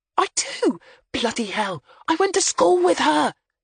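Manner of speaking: very high, shocked, scandalized hiss. Wendy, stepping into a dingy cafe, hisses at Jimmy after recognizing a girl. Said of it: "she hissed at Jimmy".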